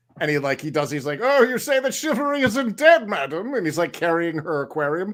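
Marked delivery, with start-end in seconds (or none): 1.2-3.6 loud, high, lofty comic declaiming flourish. Retelling a comedy sketch, quoting the comedian's line: Matt Berry impression. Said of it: "he had this thing where he's like".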